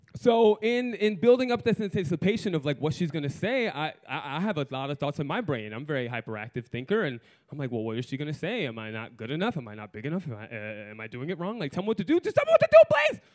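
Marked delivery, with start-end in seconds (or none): none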